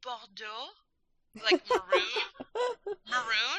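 sweet, cute put-on French accent, high. Retelling a woman's reply about a color, in a cute little French accent. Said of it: "She said in this cute little French accent".

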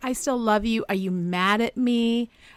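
tearful, sobbing voice, words broken up by sobs. Retelling a cast member's plea to her partner: imitating someone sobbing.

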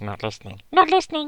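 eerie creature voice, pitched very high. Asked by a co-host to perform a scene, doing a Smeagol voice. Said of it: "We haven't done your Smeagol voice on here before".

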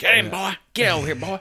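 put-on hillbilly hollering. Joking about forming a posse to go into the woods, mock hillbilly hollering. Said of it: "we'll start hollering and say".

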